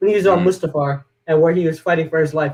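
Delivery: ordinary delivery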